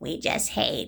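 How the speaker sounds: mocking, hushed whisper. Mocking the people being ranted about by imitating their voices. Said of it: "when I'm imitating them".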